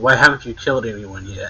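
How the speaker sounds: ordinary talk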